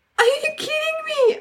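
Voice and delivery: very high sobbing with audible disbelief. Retelling being told to buy a parking ticket, re-enacting sobbing. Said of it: "And I'm sobbing".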